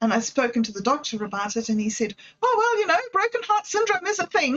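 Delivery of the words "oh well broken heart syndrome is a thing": mock bright, chirpy, very cheerful, very high voice. Quoting the doctor's reply about the speaker's heart pains, imitating a very cheerful voice. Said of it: "in his very cheerful voice".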